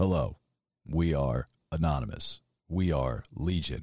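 very low, soft robotic computer voice. Recalling voice messages emailed by members of Anonymous, in the computer voice. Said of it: "that thing with the computer voice".

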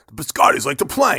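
loud monster truck announcer voice. Pitching a biscotti ad campaign idea, in a monster truck voice. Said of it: "I'm thinking like monster truck voices".

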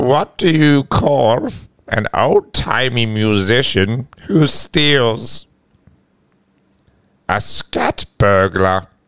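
put-on old-timer grandpa character voice. Taking a turn telling jokes with friends, tell yours in a grandpa voice. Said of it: "Grandpa voice".

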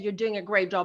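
normal talking voice

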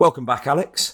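pointed, falsely polite, passive-aggressive tone. Retelling how the course leader greeted a returning participant: imitating a passive-aggressive greeting. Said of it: "in a really passive-aggressive way".

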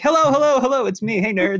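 host voice, one octave up. Showing how you sit up and welcome everybody back, one octave up, a little louder. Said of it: "you just do that like one octave up".

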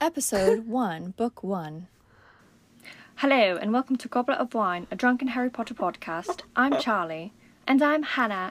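fake British accent, intro announcer style. An american reads a podcast's first episode intro in a put-on british accent. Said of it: "I will be speaking in a British accent".

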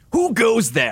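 very high, sing-song hissed voice. Voicing Gurf in a multi-voice story reading, hissing as Gurf. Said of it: "Hissed Gurf".

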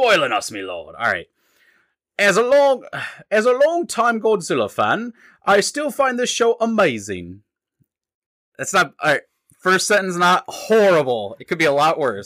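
bad put-on British accent. Reading a listener review aloud: put-on British accent. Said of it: "you better have done this in a British accent".

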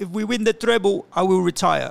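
very bad, terrible put-on Spanish accent. Quote what he said in his presser to the others, in a very bad Pep accent. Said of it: "That's a very bad Pep accent".

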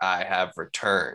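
dark, menacing, ominous narrator voice. Showing others how the audiobook's reader does an ominous line, in Steven Pacey's very dark voice. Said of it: "does this very dark voice that's like".

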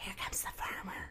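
very quiet, hushed, breathy whisper. Minnie to Moo during the barn tour, whispering. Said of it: "Minnie whispered to Moo".

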